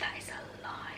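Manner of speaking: soft, unvoiced whispered aside.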